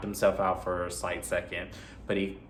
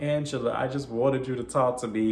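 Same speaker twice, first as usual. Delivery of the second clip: put-on tearful, pleading voice, crying through the words; 4 semitones higher than usual. Retelling a movie scene where a character begs someone walking away: imitating a crying plea. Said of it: "He's pleading with her. He's crying".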